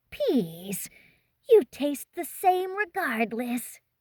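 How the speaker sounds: high, hissing creature voice. Narrating a story, voicing the leader of the locals, hissing. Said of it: "The leader hissed".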